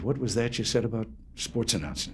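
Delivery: ordinary delivery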